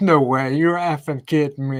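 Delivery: ordinary delivery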